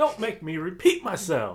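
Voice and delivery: navigation device voice, loud. Joining in, imitating a GPS voice done as Samuel L. Jackson: Samuel L. Jackson voice. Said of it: "Samuel L. Jackson being your voice for your G P S".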